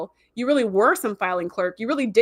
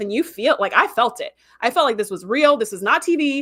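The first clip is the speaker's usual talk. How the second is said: normal talking voice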